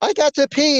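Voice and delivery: play-acted, very high, urgent, desperate voice. Retelling how a woman acted out a script line: imitating someone acting desperate to pee. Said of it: "she's holding her crotch like she's holding back the pee".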